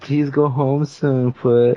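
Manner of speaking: drawn-out, high, slow begging plea. Retelling a phone call where Sammy begged: imitating Sammy begging. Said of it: "he's, like, begging me and shit".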